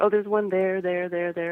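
usual speaking voice

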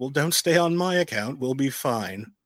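smug, self-satisfied, pleased-with-himself tone. Recapping an episode, quoting Maul as Bo leaves, smug Maul line. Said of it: "And smugly, Maul says".

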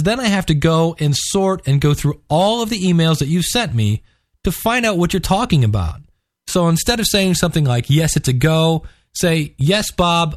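usual speaking voice

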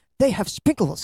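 put-on thrilled, eager, high-pitched excited burst. Retelling a movie scene about ice cream: imitating Knuckles' excitement. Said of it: "Knuckles' excitement".

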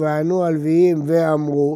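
ordinary talk

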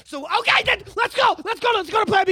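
put-on very high, frantic, panicked yelling. A player's character urges the team to go to plan B: panicked yelling. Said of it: "this is me having a fucking panic attack".

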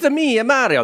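high cartoon voice, Italian accent. Discussing how Super Mario is portrayed, doing an over-the-top Mario impression. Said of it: "No, more".

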